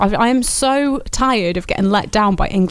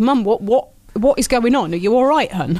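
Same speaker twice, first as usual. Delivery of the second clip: plain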